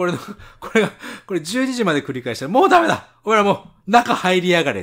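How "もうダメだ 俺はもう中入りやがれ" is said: angry shout, higher and louder. Retelling ordering the noisy guests to go inside: imitating himself yelling angrily. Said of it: "っ つ っ て ね".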